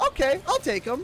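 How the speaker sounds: high, loud, eager voice.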